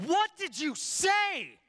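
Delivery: play-acted yell, very shrill, swooping, loud, drawn-out. Retelling an exchange with his wife, retelling a yell. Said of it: "So I'm like yelling".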